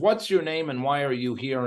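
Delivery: put-on Puerto Rican accent, broken English. Retelling what a prison ministry founder asked: Manny Mills's broken Puerto Rican accent. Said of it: "in his broken Puerto Rican accent".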